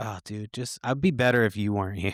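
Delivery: ordinary delivery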